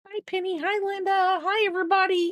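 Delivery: very high little dog voice. Voicing the dog Biscuit for the viewers: speaking as Biscuit the dog. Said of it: "Go like this. Go".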